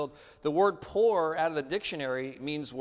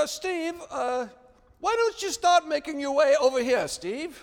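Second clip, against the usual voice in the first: put-on British accent, much higher, louder; 12 semitones higher, 5 dB louder than usual. Retelling how the instructor in charge called him over, british accent. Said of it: "he had kind of a British accent".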